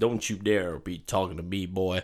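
low, deep Southern cowboy voice. Retelling a film scene, quoting the villain: Jeffrey Dean Morgan Southern cowboy voice. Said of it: "he is a Southern cowboy".

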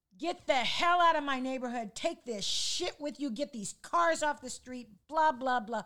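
mock, very loud, high-pitched, furious angry yelling. Retelling an older neighbor charging down his steps, retelling an angry yell. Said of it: "he comes flying down his steps yelling".

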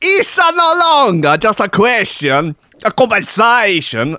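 Italian-American-accented speech. Trying out an accent that no one would have a problem with, in a sort of American-Italian accent. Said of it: "that's got a sort of American-Italian ring to it".

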